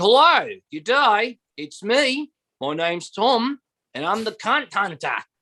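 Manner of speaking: put-on high-pitched Australian accent, man's voice. Imitating a guy the speaker knows, in an Australian accent. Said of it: "He's just an Australian guy".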